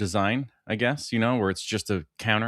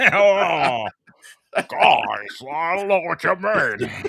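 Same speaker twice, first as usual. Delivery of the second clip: pitched-up high voice, long drawn-out oh; 7 semitones higher than usual. After others say the man sounds like Edgar, speaker keeps the Edgar voice going. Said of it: "why does he sound like Edgar".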